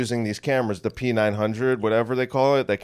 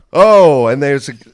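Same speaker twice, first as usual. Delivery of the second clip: loud mock angry rant, fed up. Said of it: "I'm getting so angry right now".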